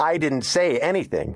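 firm, insistent protest. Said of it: "John insisted".

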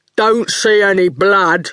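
strong, bold, dopey-sounding daft voice. Reading a story, the goon answers Howard in a strong, daft voice. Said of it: "He spoke in a strong, daft voice".

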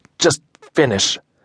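through clenched teeth. Narrator reading Dylan's reply to Adam during a tattoo, through gritted teeth. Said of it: "I manage through gritted teeth".

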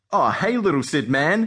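ordinary delivery, nothing marked

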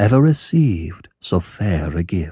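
ordinary delivery

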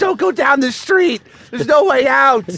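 put-on screaming. Speaker recounts sitting on the stoop yelling at a flower truck, retelling a scream. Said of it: "just screaming".

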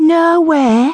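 very high, tinny falsetto, mocking. A woman mocks Angel's answer, repeating it in a tinny falsetto. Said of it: "the woman repeated in a tinny falsetto, mocking Angel's strained little girl voice".

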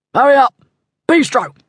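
high-pitched, furious, angry shout. Narrator reads a call from one of a group of men, angry shout. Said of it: "the angry voice shouted".

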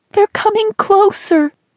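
shrieking, very high scream. Narrating, Mel, beside Rachel and Dusty near raging water: screaming. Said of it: "Mel screamed".

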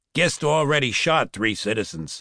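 plain reading voice

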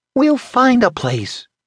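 piercing whisper. A narrator reads a woman whispering to the man she just kissed; shrill whisper. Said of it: "she whispered shrilly".

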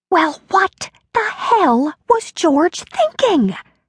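whispering fiercely, intense. A woman on the phone with her father reacts to his news in a fierce whisper. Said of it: "She whispered fiercely".

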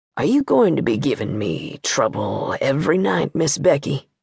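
very low, hushed, soft deep bass voice. Reading a story aloud, voicing the Judge's question at bedtime: very low voice. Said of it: "He said it in his low, low voice".

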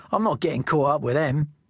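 ordinary delivery

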